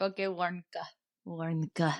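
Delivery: imitated Russian accent, quiet. Retelling how a coworker always said a work ID, Ray's put-on Russian accent. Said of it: "we all used to just say it in a Russian accent".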